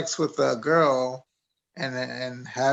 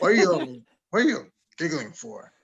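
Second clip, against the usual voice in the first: put-on angry priest voice; 2 semitones higher than usual. Retelling a priest scolding giggling churchgoers: imitating an angry priest. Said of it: "he got, like, real, like, pissed. It's like".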